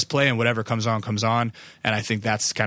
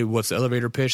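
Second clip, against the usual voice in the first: normal talking voice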